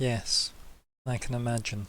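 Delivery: flat, slow, emotionless deadpan. Voicing a character answering a nervous player: with no emotion. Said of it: "he says, like, with no emotion".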